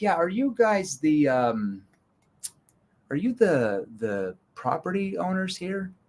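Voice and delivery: play-acted unsure, puzzled, confused, halting. Retelling his own reply when they offered help, asking in a mock-confused tone. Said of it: "And I would use a confused tone".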